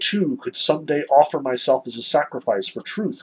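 ordinary talk, nothing marked

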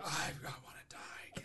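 whispered, high, mortified tone.

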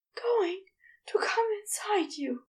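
high, breathless, panting delivery. Narrating an intimate scene, one lover speaks to the other: panting. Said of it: "Aziraphale panted".

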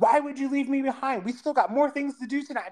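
mock, high-pitched, screamed-out yell. Recalling a man who ran out of a restaurant after them: retelling a man's screaming. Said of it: "he came running out of the restaurant and was screaming at me".

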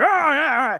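mock very vocal, loud, high-pitched excited cheering. Retelling how Gary Busey reacted in the audience: imitating Gary Busey cheering loudly. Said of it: "very vocal".

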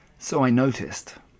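ordinary delivery

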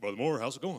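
big, full man's voice. Retelling what the pastor asked him: imitating the pastor's big voice. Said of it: "he's got a big voice".

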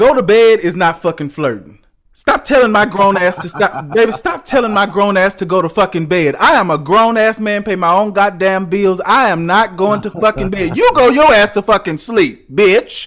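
loud, heated, furious ranting tirade. On the season's last episode, venting about being told to go to bed: angry ranting. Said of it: "Why are you so mad about that?".

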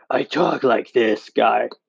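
badly put-on, slow, drawn-out, dark, brooding voice. Describing how the character wasn't always this way, in a dark, brooding Batman voice. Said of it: "That's probably the worst impression of Batman I could do".

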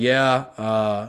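flat monotone voice. Retelling a player's answer to a question about falling short: monotone voice. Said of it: "he was using the same monotone voice".

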